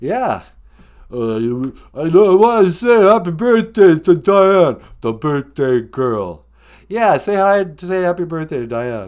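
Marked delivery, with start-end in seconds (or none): 1.1-6.5 put-on tough street voice of an action star. Playing a caller on the podcast's phone line: Sylvester Stallone impression. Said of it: "Rocky's here".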